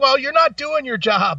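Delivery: snappy, high-pitched, quick sharp delivery. Retelling how they snapped back at the waitress: retelling a snappy retort. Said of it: "I snapped right back at her".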